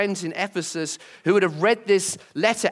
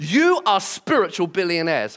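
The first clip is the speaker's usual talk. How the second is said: plain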